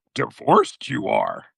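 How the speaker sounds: low, creaky, croaking character voice. Joking about a divorced dad in Return of the Jedi, doing a Yoda voice. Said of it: "you you like that Yoda voice".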